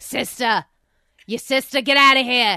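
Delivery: loud Boston accent. Trying out words to say in a boston accent. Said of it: "words that I could say in a Boston accent".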